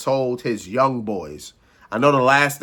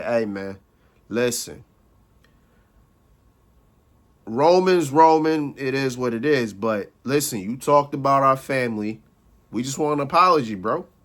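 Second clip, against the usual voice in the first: the calmest, easiest possible tone. Retelling a wrestler calmly asking Punk for an apology: imitating someone speaking very calmly. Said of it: "in the most calmest way possible".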